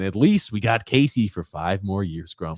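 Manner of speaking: usual speaking voice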